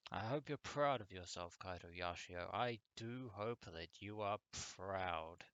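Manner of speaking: thick, snide, dripping, heavy sarcasm. Blaming a game character for his choice: dripping sarcasm. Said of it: "I say that with dripping sarcasm".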